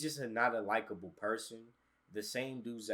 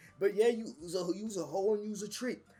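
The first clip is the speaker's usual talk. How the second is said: very high, loud, raspy put-on voice; 10 semitones higher, 6 dB louder than usual. Imitating a podcast guest talking about women: imitating Nick Sharp's raspy voice. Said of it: "He be on here talking about some".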